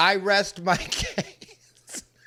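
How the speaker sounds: very slow words spoken while cracking up laughing. Reacting to a clip of someone's complaint, laughing while talking. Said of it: "I didn't mean to crack up right there".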